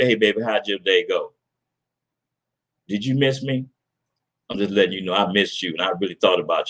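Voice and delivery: soft, hushed stage half-whisper. Acting out greeting baby coming through the door: acting out a half-whisper. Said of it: "I'm gonna whisper in the ear".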